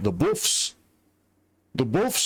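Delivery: slight northern English accent on buffs. An american repeating a word while playing a game, slight northern english accent. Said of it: "I'm getting a little bit northern there".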